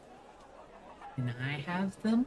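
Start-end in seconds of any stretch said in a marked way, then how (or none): 1.2-2.2 put-on high, soft, giggly child voice. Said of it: "he just goes".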